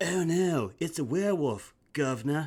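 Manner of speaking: slight put-on British accent. Auditioning after being asked to British it up: put-on British accent. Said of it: "British it up a little".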